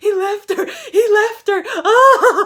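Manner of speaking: mock very loud, very high crying wail. Retelling a friend on the couch having an existential crisis: imitating a friend's distraught outburst. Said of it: "having an existential crisis".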